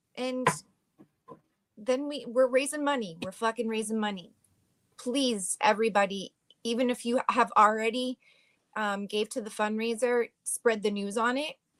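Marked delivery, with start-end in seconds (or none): 0.1-4.3 fed-up, frustrated and exasperated. Saying they are raising money after going to the state house: frustrated. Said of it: "This frustrates me so much".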